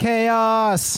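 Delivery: very high-pitched, stretched-out heckling yell. Narrating a scene and voicing a crowd member, yelling from the crowd. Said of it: "Somebody in the crowd yells up".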